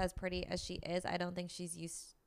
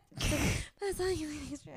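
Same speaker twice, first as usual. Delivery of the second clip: put-on mumbling voice, higher pitched; 9 semitones higher, 3 dB louder than usual. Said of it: "this is how it actually came out".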